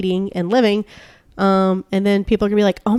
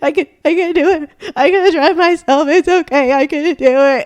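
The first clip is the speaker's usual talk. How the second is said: put-on hard sobbing through the words, high and loud; 8 semitones higher, 5 dB louder than usual. Retelling answering a man offering a hospital ride, acting out past sobbing. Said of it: "I'm just like sobbing".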